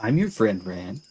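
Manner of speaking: friendly-sounding words with menacing, threatening tone beneath. Speaking in character to Ran during a role-play game, threatening. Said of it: "That sounded so threatening".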